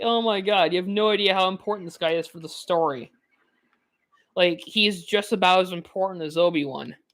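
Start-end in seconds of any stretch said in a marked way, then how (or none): none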